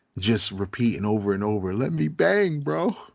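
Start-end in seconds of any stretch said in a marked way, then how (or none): 1.8-3.0 high, slow, whiny, tearful crying voice. Retelling how a man cried when not allowed his turn to fight: imitating someone crying. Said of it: "And he was crying".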